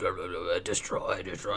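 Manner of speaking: deep, barely audible, creepy growl under the breath. Retelling the creepy voices she started hearing, in a Cookie Monster voice. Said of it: "Cookie Monster Voice".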